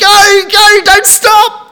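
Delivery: loud, high-pitched yell.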